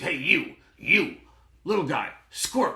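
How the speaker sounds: gruff, barked, very loud, rising yell. Imitating a man who would yell at the speaker, gruff yelling voice. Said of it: "He would yell at me in a gruff voice".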